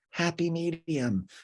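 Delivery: tiny, high little voice, shrunk down. Retelling what Raquel goes on to say, done as Raquel in the tiniest voice. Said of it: "in the tiniest voice ever goes".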